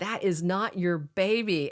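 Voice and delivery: ordinary talk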